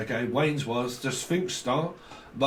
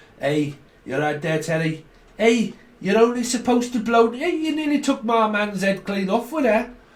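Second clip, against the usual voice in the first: put-on overdone Liverpool Scouse accent, pitched up; 8 semitones higher, 4 dB louder than usual. You demonstrate the accent for americans who may not have heard it, in an exaggerated scouse accent.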